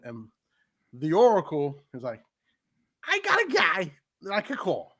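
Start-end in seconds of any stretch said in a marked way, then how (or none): 3.1-4.8 pitched up, swinging put-on voice. Acting out a wrestling storyline line in a Paul Heyman voice.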